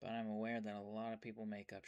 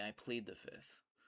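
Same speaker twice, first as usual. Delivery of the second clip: ordinary delivery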